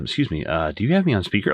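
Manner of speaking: sudden, very courteous, cordial voice with swooping pitch. Retelling a scene, the speaker imitates a man suddenly turning cordial: imitating a sudden cordial tone. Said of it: "he's like very cordial all of a sudden".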